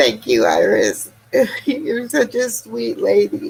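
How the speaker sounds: tearful, crying voice while speaking. Thanking a woman while crying, tearful. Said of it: "I need to stop crying".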